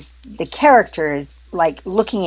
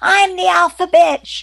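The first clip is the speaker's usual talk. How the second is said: very high-pitched, shrill mock scream; 13 semitones higher than usual. Speaker recalls the hostess addressing her big muddy dogs, imitating someone screaming. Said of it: "she's screaming".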